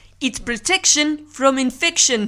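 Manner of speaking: loud, attempted put-on South African accent. Quoting a line, a film reviewer attempts a South African accent. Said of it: "you're trying to do a South African accent there".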